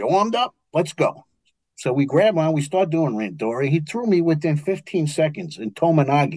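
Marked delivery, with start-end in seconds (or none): 0.0-1.2 put-on old man Brooklyn accent, higher. Retelling an old man's challenge before sparring, imitating an old man's Brooklyn accent. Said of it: "he's Chinese with a Brooklyn accent".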